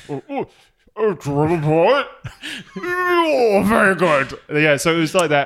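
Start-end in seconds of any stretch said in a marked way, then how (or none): 0.1-4.4 put-on retching English accent, high, slow, oh drawn out. Showing how to impersonate Charles: retching in English accent. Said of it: "that is uncanny".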